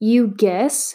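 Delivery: contemptuous, scornful, thrown-back tone. Narrating Maria answering Matt in a story, scornful. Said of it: "Maria said scornfully".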